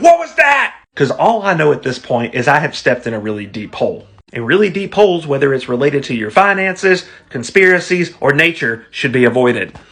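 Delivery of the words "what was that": loud, shrill, very high acted panicked scream. Retelling stepping in a deep hole: retelling a scream. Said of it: "I'm screaming at my wife".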